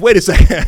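laughing, surprised double take.

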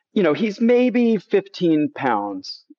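usual speaking voice

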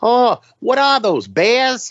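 put-on Rhode Island accent. Retelling her question about the cattle on the drive down I-40, imitating a heavy Rhode Island accent. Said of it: "heavy, heavy Rhode Island accent".

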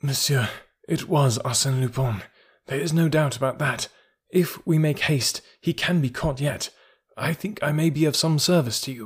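weak, feeble, weakened speech. Just freed from a gag, the narrator addresses the commissary in a weak voice. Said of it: "I addressed the commissary in a weak voice".

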